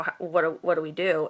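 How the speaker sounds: plain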